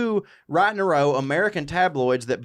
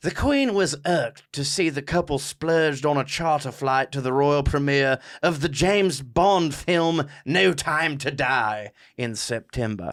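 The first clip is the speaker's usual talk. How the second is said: put-on royal voice, much slower pace. Reading a tabloid blurb aloud, doing a Queen Elizabeth II impression. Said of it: "I should do it in the voice".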